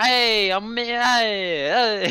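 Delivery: loud Brooklyn street-talk accent with drawn-out hey. Describing an accent to the others, Brooklyn accent. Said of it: "Brooklyn accent".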